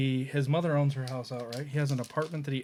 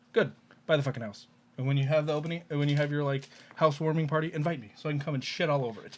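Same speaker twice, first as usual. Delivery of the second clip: playful, mock-aggressive, friendly trash-talking rant. Retelling the same person's reply about buying a house: imitating playful aggressive ranting. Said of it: "he's doing it in a playful way".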